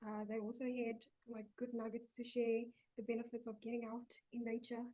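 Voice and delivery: very soft, hushed voice. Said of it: "You sound very soft".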